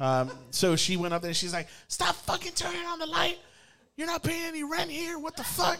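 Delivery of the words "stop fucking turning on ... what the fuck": play-acted, shrill, furious shrieking scream, very high. Retelling the girlfriend cussing out a ghost: imitating someone screaming. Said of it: "they're screaming at it".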